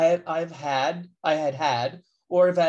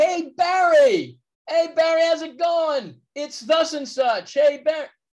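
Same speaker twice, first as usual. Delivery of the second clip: mock yell, higher and louder; 10 semitones higher, 5 dB louder than usual. Retelling how a friend in the audience called out, imitating a friend yelling out. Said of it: "this friend of mine yells out".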